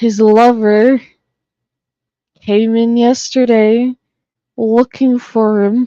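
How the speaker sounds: stifled laughter breaking through the words. Telling others that someone came looking for him: laughing while talking. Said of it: "I don't know how to say this without laughing".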